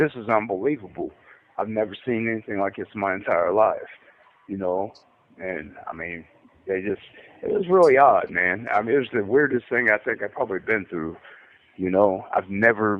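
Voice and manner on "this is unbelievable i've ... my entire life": usual speaking voice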